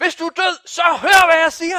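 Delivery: very high, loud shout.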